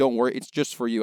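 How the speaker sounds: ordinary talk, nothing marked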